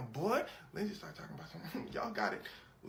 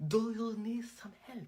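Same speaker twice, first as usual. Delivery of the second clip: put-on Arabic accent laid on thicker, pitched up; 5 semitones higher, 4 dB louder than usual. Telling how [name] offered help to a family, [name]'s heavier Arabic accent. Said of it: "let me just make my accent deeper".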